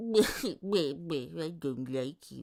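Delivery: voice pitched as deep as possible. Trying out cartoon voices while discussing them: deep Droopy voice. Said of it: "I don't know how deep I can go for droopy, but I go like".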